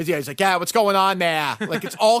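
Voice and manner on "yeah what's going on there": terrible put-on Boston accent. Mocking an actor's accent in a movie, doing Martin Sheen's bad Boston accent. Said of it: "has the worst fucking Boston accent".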